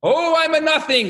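very high, drawn-out, passionate excited outburst. Telling of a student who sits between two screaming older students, imitate his passionate, excited speech. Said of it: "with all his passion and might and excitement".

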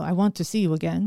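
deliberately terrible, bad French accent. Quoting a sweet French Canadian man she met, in a terrible French accent. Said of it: "I'm doing a terrible accent".

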